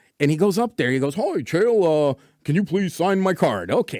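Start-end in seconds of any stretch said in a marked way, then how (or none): 1.1-3.7 full-on goofy voice, as goofy as possible. Retelling how Tarbash asked for a trading card to be signed, imitating Tarbash's goofy voice. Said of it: "as goofy as he can be".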